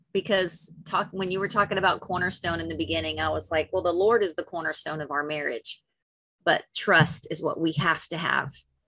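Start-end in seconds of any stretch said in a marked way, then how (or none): none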